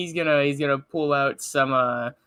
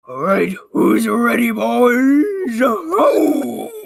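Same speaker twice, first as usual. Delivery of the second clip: shrill, very high, loud, very slow drawn-out call; 10 semitones higher, 7 dB louder than usual. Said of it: "I almost narrated in the Scooby voice".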